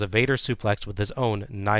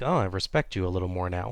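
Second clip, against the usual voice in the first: ordinary delivery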